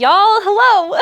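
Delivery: playful, high-pitched country accent.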